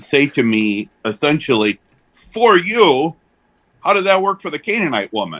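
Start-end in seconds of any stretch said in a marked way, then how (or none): 2.3-5.4 put-on gruff Brooklyn accent, pitched up. Quoting a seminary colleague's question to the speaker, imitating gruff Brooklyn accent. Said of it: "in a very kind of gruff Brooklyn sort of accent".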